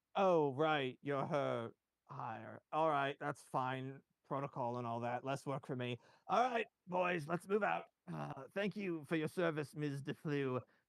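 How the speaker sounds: dutiful, worn-out, wearily resigned tone. Told it must go straight to Dane Cothram, he dismisses Ms. DeFlew with tired resignation. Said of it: "It's kind of hard to get a read on him, but you don't sense any malice in this man. More just kind of a tired resignation. / It's kind of hard to get a read on him, but you don't sense any malice in t".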